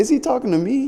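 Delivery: high, startled, disbelieving tone. Retelling own reaction to the coach's outburst: retelling own surprise. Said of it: "I was just so surprised".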